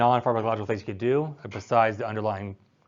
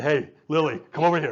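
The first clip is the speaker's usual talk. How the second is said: low deep voice, higher pitched; 12 semitones higher, 4 dB quieter than usual. Showing a class how calling a person down the hall with a low voice carries better. Low deep voice. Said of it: "your high cue voice".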